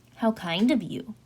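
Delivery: ordinary delivery, nothing marked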